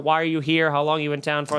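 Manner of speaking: normal talking voice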